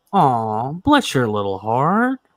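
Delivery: put-on very slow, drawn-out, patronizing Southern accent. Imitating how Southerners say it: imitating a condescending Southern tone. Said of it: "because the condescending tone they do".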